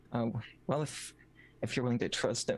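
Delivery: secretive, hushed half-whisper. A character in a role-play game discussing whether to trust someone, half-whispering. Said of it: "she's still whispering".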